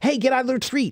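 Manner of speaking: rattled-off, hurried speech. Demonstrating how you speak to a child running into the street, very quickly. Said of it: "then you might speak very quickly".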